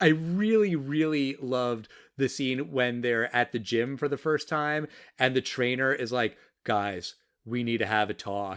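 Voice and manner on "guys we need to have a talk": low, uninflected, totally deadpan seriousness. Retelling a movie scene, quoting the gym trainer: imitating a deadpan serious tone. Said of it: "Just totally deadpan".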